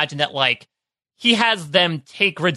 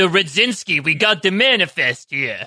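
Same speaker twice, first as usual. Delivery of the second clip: put-on thick, heavy Brooklyn accent. Retelling a tv scene where a guy shows up, in a thick brooklyn accent. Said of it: "with like this thick Brooklyn accent".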